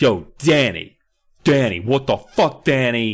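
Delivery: slow, stretched, deliberate, drawn-out character voice. Retelling a scene where a character calls out to Danny: imitating Kat's voice. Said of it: "This is her voice, so live with it".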